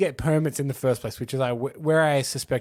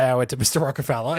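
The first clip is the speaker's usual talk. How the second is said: ordinary delivery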